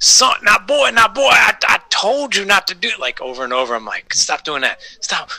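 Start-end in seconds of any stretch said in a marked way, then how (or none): 0.0-3.0 scolding tone, pitched very high. Telling off their kids the way they always do, in a Foghorn Leghorn voice. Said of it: "I'm always talking like that to my kids".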